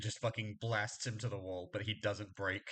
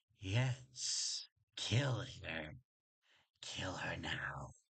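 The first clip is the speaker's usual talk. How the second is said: very slow, stretched-out stage whisper; 4 semitones lower than usual. Voicing a trickster god urging a pinned victim's death: trickster god whispering. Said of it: "the trickster god just whispering in your ear".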